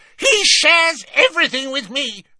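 very high, fiery, heated, quick flare-up. Bellatrix retorts to Snape, firing up at once. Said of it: "firing up at once".

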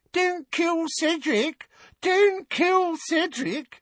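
very high-pitched jeering whimper. Narrator reads a boy mocking another boy's nightmare, in a high-pitched whimpering voice. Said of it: "adopted a high-pitched, whimpering voice".

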